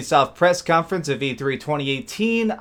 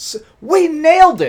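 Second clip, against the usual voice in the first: mock very high, very loud, drawn-out hyped elation; 11 semitones higher, 8 dB louder than usual. Retelling what the creative director said walking off stage: imitating someone hyped. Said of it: "she was so hyped".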